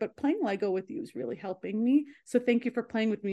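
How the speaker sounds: ordinary talk, nothing marked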